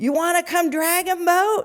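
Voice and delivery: loud, high yell. Retelling how the coach on a boat below called up: imitating the coach yelling up. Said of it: "the coach is yelling up".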